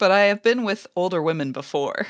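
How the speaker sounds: plain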